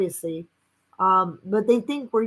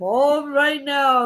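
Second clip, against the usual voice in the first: put-on haunting host voice, pitched higher; 5 semitones higher, 4 dB louder than usual. Imitating the host of Unsolved Mysteries: haunting Unsolved Mysteries host voice. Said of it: "he was like".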